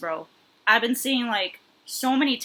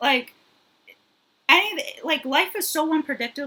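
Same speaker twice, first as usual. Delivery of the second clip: stammering, higher pitch; 5 semitones higher than usual. Responding to a story about a dying grandfather: stuttering. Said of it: "today I'm just stuttering".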